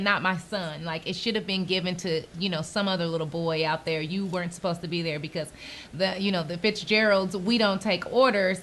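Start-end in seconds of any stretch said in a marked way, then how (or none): none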